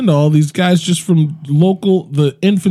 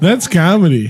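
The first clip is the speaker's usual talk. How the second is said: ordinary talk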